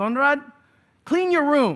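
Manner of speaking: put-on thick Filipino accent. Quoting what the speaker's mother constantly told him, thick Filipino accent. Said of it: "in her kind of thicker Filipino accent".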